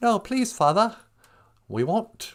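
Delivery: put-on English child voice. Acting out English school kids answering their father at bedtime, English schoolchild voice. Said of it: "some little English school kids".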